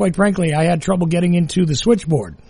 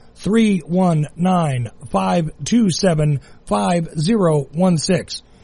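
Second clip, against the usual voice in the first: deliberately slow pace. Repeating the numbers after being told they talk too fast, very slow. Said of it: "let's slow it down".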